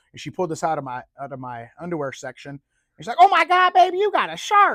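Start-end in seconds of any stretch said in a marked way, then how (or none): 3.1-4.7 southern drawl, very high-pitched, very loud, drawn out. Retelling what the lady checking his luggage said on finding the shark, southern accent. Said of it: "she had that southern accent".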